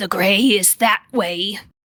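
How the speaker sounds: loud, very raspy, rough voice. The narrator voices a bartender answering, in a very raspy voice. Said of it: "in a very raspy voice says".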